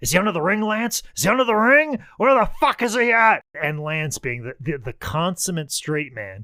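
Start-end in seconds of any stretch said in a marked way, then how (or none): 0.0-3.4 high, loud, belligerent screaming. Retelling a wrestler screaming at an empty arena: imitating Terry Funk screaming.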